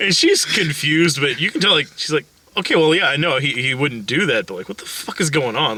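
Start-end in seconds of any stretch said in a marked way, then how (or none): none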